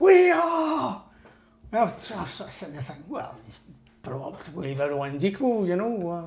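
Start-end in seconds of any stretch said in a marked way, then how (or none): 0.0-1.0 put-on group shout, much higher and louder. Recounting how everyone in the class shouted back an answer, imitating a class shouting. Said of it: "put their hands up and shouted".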